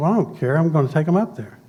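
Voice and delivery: ordinary talk, nothing marked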